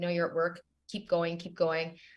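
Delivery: ordinary talk, nothing marked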